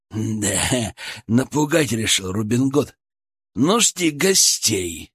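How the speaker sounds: ice-cold, low and slow. A hidden voice answers a man who threatens to hunt him down, in an icy tone. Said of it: "Голос выдал последнюю фразу таким ледяным тоном".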